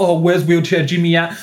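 plain

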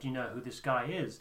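normal talking voice

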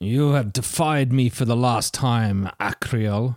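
harsh, merciless and cruel tone. Narrator voices a figure in the darkness addressing akriel; harsh, cruel voice. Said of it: "a harsh voice breaks the silence of the night".

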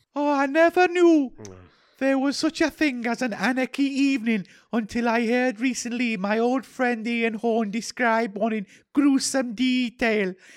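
put-on Welsh accent. Taking a turn in a round of doing regional accents; Welsh accent. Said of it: "I'm doing Welsh now".

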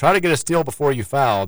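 ordinary talk

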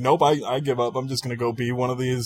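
normal talking voice

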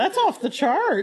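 accent from Fargo. Repeat your reaction after noticing how you suddenly sound to the other speaker, in a Fargo accent. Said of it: "I'm doing like a Fargo accent".

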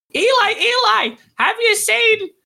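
small voice, piping up. Telling a story, voicing someone calling from the back of the house: small voice piping up. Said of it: "you hear this small voice pipe up".

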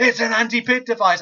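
apoplectic commentator yelling, high and loud. Retelling a commentator's reaction to a robot fight: imitating Jonathan Pierce shouting. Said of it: "Jonathan Pierce is just shouting".

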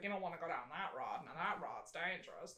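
put-on very quiet, low old country codger voice. Recalling the old guy in Pet Cemetery, doing an old guy impression. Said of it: "I'm doing more of an impression of his character".

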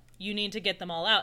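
plain

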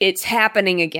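ordinary talk

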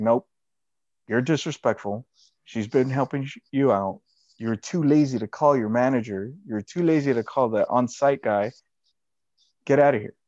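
imitated stern tone and attitude. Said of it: "stern or this attitude".

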